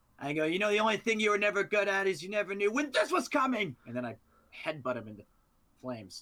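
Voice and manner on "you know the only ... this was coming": very high-pitched shouting. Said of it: "we're just shouting".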